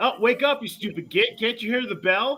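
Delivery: very high, rousing, piercing yell. Voicing Flemeth waking an orc: Flemeth yelling at the orc. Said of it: "Flemeth yells at the orc going".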